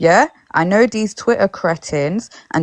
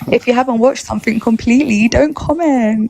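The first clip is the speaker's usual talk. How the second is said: sugary, sweet, extra-polite, overly nice delivery; 4 semitones higher than usual. Giving commenters an opinion, told nicely, in a nice voice. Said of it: "with my nice voice".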